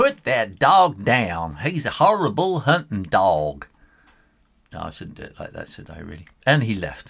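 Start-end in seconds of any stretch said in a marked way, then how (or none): 0.0-3.7 bad put-on American accent, loud and slow. Quoting the driver at the vet clinic in her worst american accent. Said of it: "here I do my worst American accent".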